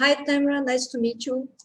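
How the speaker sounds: soft, barely audible delivery. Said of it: "Can you speak up a little bit?".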